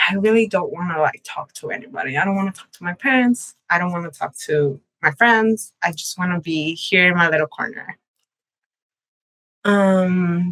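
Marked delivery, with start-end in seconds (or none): none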